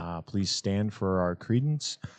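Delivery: put-on store intercom announcer voice. Imitating Troy announcing over the grocery store intercom: Troy on the store intercom. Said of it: "That's the first thing he does on the intercom?".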